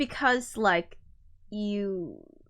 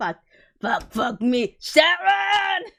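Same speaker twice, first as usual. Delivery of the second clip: put-on old man voice, higher and louder; 7 semitones higher, 6 dB louder than usual. Retrying the voice after chat asks for more expletives: old man voice. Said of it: "Needs more expletives".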